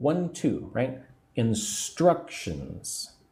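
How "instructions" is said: instructions with stress on second syllable struc. Teacher saying instructions slowly with emphasis on part two: stress on struc in instructions. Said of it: "put the emphasis on part two".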